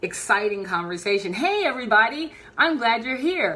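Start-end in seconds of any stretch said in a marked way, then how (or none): 1.3-3.6 lively, upbeat, energetic, really enthusiastic delivery. Speaker demonstrates greeting an audience with a smile, smiling and energetic. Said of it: "it brings up the energy".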